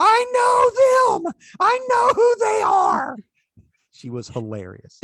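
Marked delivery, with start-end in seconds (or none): 0.0-3.2 very loud, very high excited yell, know stretched. Retelling what a woman dressed as Mrs. Claus yelled: retelling a Buddy the Elf yell. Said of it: "she yelled like Buddy the Elf".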